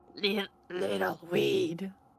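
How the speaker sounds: halting, broken-up, raspy, sneering voice. Playing a creepy figure who addresses the players, halting, rasping voice. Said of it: "halting, rasping voice".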